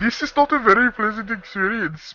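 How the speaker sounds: put-on, performed Indian English accent. A British speaker demonstrates how to do it, in an imitated Indian accent. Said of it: "if you do the Indian accent, you gotta bobble wobble your head while you talk. Like".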